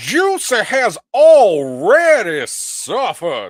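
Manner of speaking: heavy put-on Southern drawl, very loud, very slow. Reading a written quote aloud: put-on deep southern voice. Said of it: "I got a deep, deep inflection".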